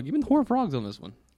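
voice cracking mid-phrase. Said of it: "Get that voice crack right there".

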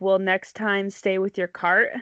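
ordinary talk

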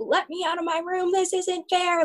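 play-acted tearful tantrum, high crying scream. Retelling being shut in behind a baby gate at three or four, imitating screaming and crying. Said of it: "I was screaming and crying".

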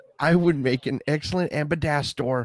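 normal talking voice

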